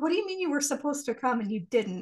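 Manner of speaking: ordinary talk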